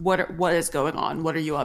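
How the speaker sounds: demanding, masked vigilante superhero voice. Voicing Batman speaking to the players through a hologram: Batman voice. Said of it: "and he is like".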